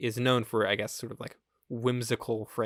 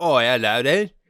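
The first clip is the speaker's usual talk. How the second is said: strong put-on English accent, louder; 12 dB louder than usual. Mocking a film whose French characters all talk with a strong English accent. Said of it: "every single character also has a strong English accent".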